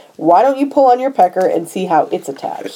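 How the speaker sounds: ordinary talk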